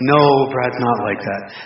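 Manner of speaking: low, slow, sighing delivery. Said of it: "tell you with a sigh".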